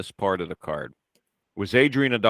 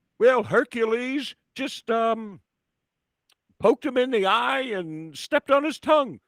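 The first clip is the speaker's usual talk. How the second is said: put-on very high-pitched old man voice, Alabama accent. Mock-commentating a wrestling match, the speaker does Lord Alfred Hayes as old Alabama man. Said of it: "sound like an old man from like Alabama".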